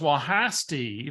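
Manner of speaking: broad-vowelled Texas twang. Retelling a birthday phone call from Barbara, in Barbara's Texas twang. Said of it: "she's got that good Texas twang".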